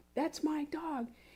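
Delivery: high-pitched, small, restrained scream. Retelling a neighbor screaming during a dog fight: imitating a neighbor screaming. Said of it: "when she screams".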